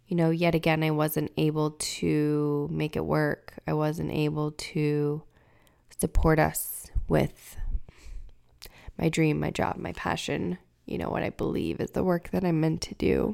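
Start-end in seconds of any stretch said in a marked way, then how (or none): 0.8-7.5 low, slow, emotional, close to tears. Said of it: "I'm very emotional today".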